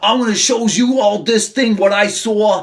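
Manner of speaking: put-on high-pitched Brooklyn accent. Retelling a story, speaker quotes Eddie Brock in a Brooklyn accent. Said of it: "I'm going Taz again with my Brooklyn accent".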